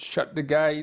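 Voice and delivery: high, loud Cockney shout. Recalling an old man shouting at football matches, in a Cockney accent. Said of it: "and this Cockney accent".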